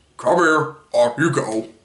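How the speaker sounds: deepened character voice. Describing how someone voices game characters, imitating a Bowser voice. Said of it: "he'll sound just like Bowser when he talks. Like".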